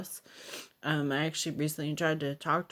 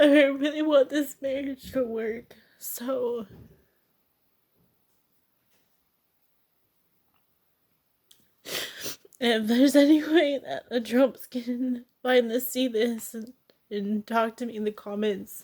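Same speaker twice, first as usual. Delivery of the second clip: high, raised tearful speech, talking through tears; 8 semitones higher, 6 dB louder than usual. Addressing viewers who might comment, crying while talking. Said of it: "I don't know why I'm crying".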